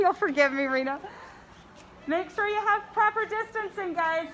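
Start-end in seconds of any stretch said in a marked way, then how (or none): 2.1-4.3 loud, high-pitched calling out, louder than before. Speaker at the zoo calls out to the crowding visitors, louder.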